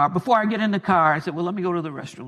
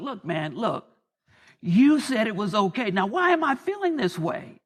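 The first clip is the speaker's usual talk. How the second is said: play-acted furious, fuming, aggrieved angry tone; 4 semitones higher than usual. Retelling what was said to God in the back of the car, imitating fuming anger. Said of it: "And I am literally fuming".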